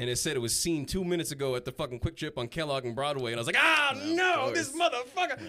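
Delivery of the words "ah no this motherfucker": put-on very high, loud, drawn-out pissed-off groan. Retelling finding out where the stolen bag went: imitating own pissed-off outburst. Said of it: "I'm getting all pissed off".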